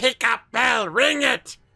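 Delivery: screaming in an acted character voice. Voicing a character telling another to ring the bell: screaming in character. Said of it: "sort of just screams".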